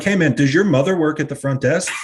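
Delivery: sarcastic needling tone. Retelling what they say to people who leave weights out: imitating own sarcastic remark. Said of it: "I usually go up to people real sarcastic".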